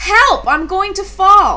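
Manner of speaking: high, fearful, frightened crying out. Froggy, up high with Duck and finding he dislikes high places, cries out. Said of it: "Then he cried".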